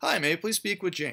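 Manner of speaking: upbeat, energetic. Demonstrating how to open a phone call to a customer, upbeat and energetic. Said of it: "a little bit more energetic than your everyday voice".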